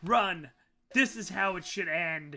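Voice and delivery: acted-out scream. Players plan an ending where Eva screams to them: acting out a scream. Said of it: "she screams to you".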